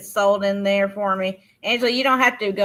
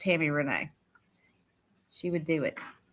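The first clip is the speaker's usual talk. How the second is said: ordinary talk, nothing marked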